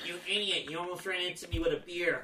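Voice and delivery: taunting, mocking parody of a voice. Telling a Super Bowl party story, imitating Jimmy mocking the speaker's voice. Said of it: "this is my impression of doing the impression".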